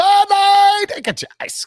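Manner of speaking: very high, half-hearted stadium vendor holler. Counting down the days to NFL games, imitating a beer vendor yelling. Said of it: "I'm not doing a very good beer vendor today".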